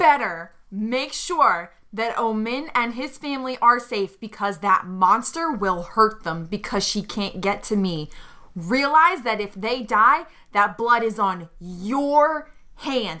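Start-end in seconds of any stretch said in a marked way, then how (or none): none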